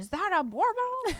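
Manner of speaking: acted-out, excited yell way up high. Retelling calling out to a guy from a distance on the river: retelling a yell. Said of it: "and so I yelled to the guy".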